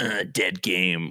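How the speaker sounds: mocking, sneering put-on voice. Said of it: "That's your new voice".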